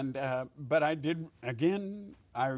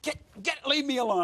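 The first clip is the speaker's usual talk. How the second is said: very high, shrill, wild top-of-lungs screaming; 11 semitones higher, 4 dB louder than usual. Retelling standing in the street slapping a cab: imitating screaming at the top of lungs. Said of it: "screaming at the top of my lungs".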